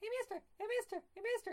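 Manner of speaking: very high, tiny little cartoon mouse voice. Recalling an old animated segment set in a store, imitating a little cartoon mouse. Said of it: "there's a little mouse going".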